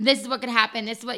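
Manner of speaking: plain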